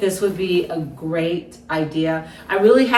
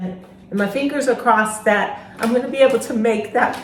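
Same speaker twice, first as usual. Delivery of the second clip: gently moved voice, a little emotion showing; 4 semitones higher than usual. A caller introducing herself, speaking a little emotional. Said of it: "I'm a little emotional".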